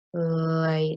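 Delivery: "lightly" said slowly, stretched syllable by syllable. Showing the stretch syllable technique on a word: stretched syllables, two seconds each. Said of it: "it would sound like this".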